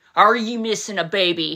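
put-on condemning voice. Retelling how a man asked the speaker again, imitating a condemning voice. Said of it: "with a condemning voice".

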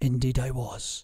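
whispering. A father answers his daughter's remark, whispering. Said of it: "he whispered".

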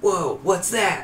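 high, slow, drawn-out wondering character voice.

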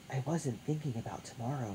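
soft, hushed stage whisper. Narrator reads Matt's reply to Tony at night, half-whispered. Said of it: "Matt whispered".

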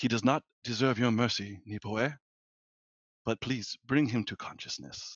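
murmured, muttered under the breath. A player's character grasps his holy symbol and prays over an unconscious man: under the breath. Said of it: "kind of under my breath".

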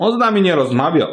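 reproaching complaint. The dog answers the genie's question reproachfully. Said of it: "powiedział z wyrzutym pies".

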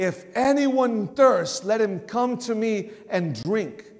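slow, drawn-out, loud shout. Retelling how a crowd's attention was grabbed in the temple: imitating a yell. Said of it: "he's yelling".

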